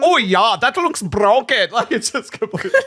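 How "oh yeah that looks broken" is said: loud, clumsy, failed attempt at French accent. Retelling what a doctor said about an X-ray: bad French accent imitation. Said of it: "I cannot do a French accent".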